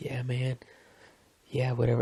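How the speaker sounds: gently spoken, soft, low-key voice. Describing the guys in the shared office, imitating a soft-spoken guy. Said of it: "one guy has a soft-spoken voice".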